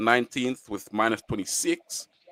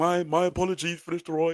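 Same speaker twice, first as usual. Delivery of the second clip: dopey voice, pitched a touch higher; 8 semitones higher than usual. Picturing Martin Keown apologizing to Van Nistelrooy, dopey Martin Keown voice. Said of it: "in his dopey voice".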